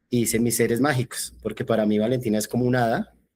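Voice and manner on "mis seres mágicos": ordinary delivery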